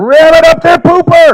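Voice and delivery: shrill, full-throated scream at top of lungs. Retelling what someone screamed after standing up: imitating someone screaming. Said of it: "screams at the top of his lungs".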